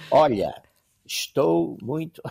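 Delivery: put-on Portuguese, slow, loud and deliberate. Retelling how the ambassador spoke Portuguese to Spaniards: imitating slow deliberate speech. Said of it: "ele falava assim".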